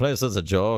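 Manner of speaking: loud, slow, drawn-out mock Canadian accent. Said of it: "why does he sound like that?".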